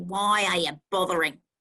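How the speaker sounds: put-on speaking with an Australian accent. Retelling what a woman said when the speaker tried to be kind: Australian accent. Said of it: "with this lovely Australian accent".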